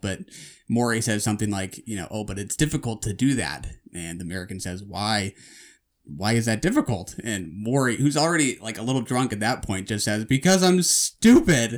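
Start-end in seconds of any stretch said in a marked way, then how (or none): 10.2-11.8 mock frustrated, fed-up, raised, exasperated outburst. Retelling how Maury, a little drunk, answered the American; imitating Maury's exasperation. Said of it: "in this kind of exasperated, frustrated voice".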